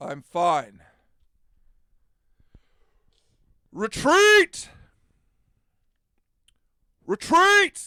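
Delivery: booming, very loud, swooping bull character voice. Asked if all right by another character, speaker replies in bull voice. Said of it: "I gotta get back to bull voice".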